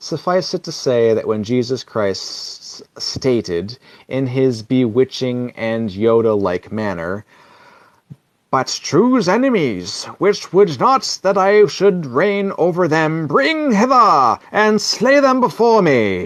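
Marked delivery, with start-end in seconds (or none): 8.5-16.3 put-on English accent, higher pitch. Quoting Jesus Christ's words while listing history, Jesus Christ in English accent. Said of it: "I don't know why I gave him an English accent".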